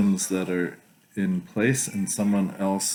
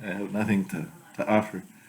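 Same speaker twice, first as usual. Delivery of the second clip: ordinary talk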